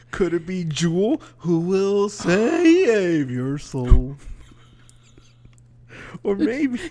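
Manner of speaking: high, swooping southern cartoon-dog drawl, save stretched. Guessing a name, the speaker offers another answer in a cartoon-dog Southern accent. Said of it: "You sounded like a cartoon dog. Southern accent".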